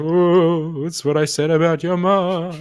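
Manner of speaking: high, eerie ghostly taunting voice, "mom" drawn out. Voicing a ghost who answers the group through spelled letters, ghostly voice. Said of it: "Ghostly voice just".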